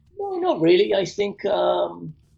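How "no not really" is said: unexpectedly very high-pitched voice. Answering whether they prefer television or film: voice going high. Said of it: "don't know why my voice went high there".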